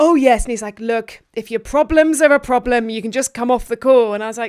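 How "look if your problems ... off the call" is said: put-on, attempted northern English accent. Retelling what a man on a call told them, attempted northern accent. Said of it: "I'm going to try and do a northern accent".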